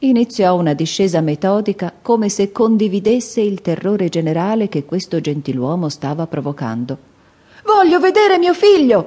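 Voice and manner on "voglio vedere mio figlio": very high-pitched voice, almost a shriek. Mr. Button demanding of a nurse to see his son, almost shrieking. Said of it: "strillò quasi".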